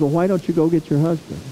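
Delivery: ordinary talk, nothing marked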